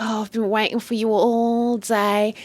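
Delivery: slow, seductive purr.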